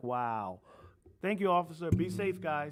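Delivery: put-on slow speech with chuckling throughout. Retelling how someone thanked an officer: imitating someone laughing while talking. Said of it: "he was just laughing like".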